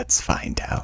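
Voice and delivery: sinister, hushed, creepy, breathy whisper. Retelling what someone said about screaming before dying: imitating a creepy voice. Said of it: "in a creepy voice".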